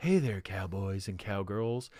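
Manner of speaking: put-on sultry, sexy female radio show host voice. Describing a woman in a cowboy hat coming around the corner, imitating a sexy radio host. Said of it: "trying to be a, a fucking radio show host".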